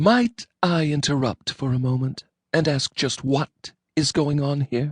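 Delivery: icy cold tone, pitched a little high. Reading a story aloud, the narrator voices Angelina interrupting from the kitchen door, icy cold. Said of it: "spoken in a tone of voice of a temperature approaching absolute zero. My darling Angelina stood in the kitchen door, / My darling Angelina stood in the kitchen door, / spoken in a tone of voice of a t".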